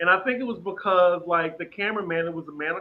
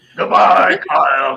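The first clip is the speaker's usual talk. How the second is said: put-on shouting voice, louder; 13 dB louder than usual. Doing an impression asked for by viewers: Kyle impression. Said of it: "do my Kyle impression".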